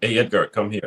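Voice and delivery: ordinary talk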